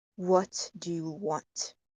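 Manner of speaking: slow, soft, low feminine voice.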